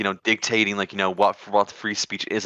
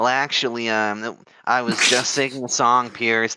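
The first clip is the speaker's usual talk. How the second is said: put-on stoner voice; 3 semitones higher than usual. Retelling an interview answer, imitating the interviewee: imitating Clavicular with a stoner voice. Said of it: "Why are you doing, like, a stoner voice?".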